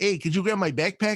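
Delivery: Chicago accent, flat vowels. Imitating how people in chicago talk: flat chicago accent. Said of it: "very flat vowels".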